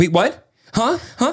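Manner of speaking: very high, confused, startled, alarmed panic. Retelling Lauren's reaction to the doctor news: imitating Lauren freaking out. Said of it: "she was starting to freak out".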